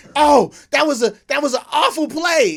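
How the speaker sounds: shrill, booming, very high-pitched, very loud outcry. Retelling her reaction while watching the game: imitating someone yelling. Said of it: "you're yelling, you're yelling at".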